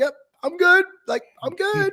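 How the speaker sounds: mock very high voice, cracking, on the verge of crying. Retelling a film moment, imitating Andrew Garfield about to cry. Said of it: "starting to break, like he was about to cry".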